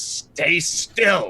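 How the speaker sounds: growled-out, growling delivery. Game master voicing an enemy who can't grab the player, growling. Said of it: "he growls and he goes".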